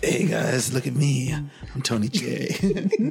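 sleazy, swaggering voice laid on thick. Inventing a character from the name, playing him in a skeezy Tony J voice. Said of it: "sounds like a skeezy like radio producer".

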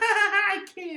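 high, squeaky put-on lady voice. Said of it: "Y'all like my lady voice".

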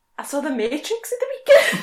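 Welsh accent, delivered loudly. Recording Christmas outtakes, trying a line in an accent that sounds Welsh.

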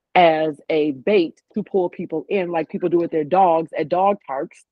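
plain

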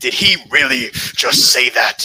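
slow, loud, stunned disbelief. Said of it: "And he's like".

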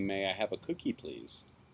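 very quiet, gentle, soft and sweet voice. Speaker demonstrates asking calmly instead of screaming, in a soft, sweet voice. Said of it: "In a very soft and sweet voice".

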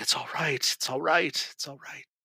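murmured under the breath. A narrator voices a man comforting a weeping man, under his breath. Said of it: "just under his breath".

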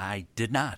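quiet, soft-spoken talk-show host voice. Reacting to an unexpected answer: Johnny Carson impression. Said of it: "my little bit of my Johnny Carson".

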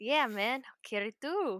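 "carry" said in a put-on Filipino accent. Agreeing to Gwen's request to change the logo, in a Filipino accent. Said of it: "You gotta use the Filipino accent on the carry".

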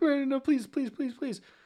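mock, very high, shrinking, cowering pleading tone. Retelling a scene where she points her wand at him: mock cowering plea. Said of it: "And he like cowers".

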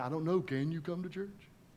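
very quiet, hushed sarcasm. Retelling her own past answer to a woman's request, retelling her sarcastic reply. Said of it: "Sarcastic me".

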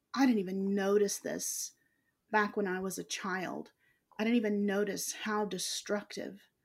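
usual speaking voice

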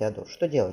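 usual speaking voice

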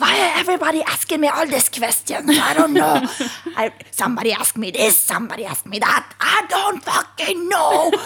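mock-furious, high, loud, blowing-up rant. Retelling a train conductor's outburst at passengers; imitating a furious conductor. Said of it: "han blir jättearg".

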